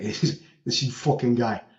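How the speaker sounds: put-on Bronx accent, slow, deliberate and blunt. Retelling how a man dropped a bombshell on them, in a Bronx accent. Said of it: "his Bronx fucking accent".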